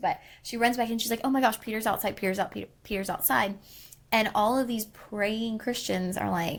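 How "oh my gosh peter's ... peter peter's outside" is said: overexcited, rattled-off rush, words tumbling out. Retelling how the servant ran back with news: imitating an excited servant. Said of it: "She gets so excited that she runs back".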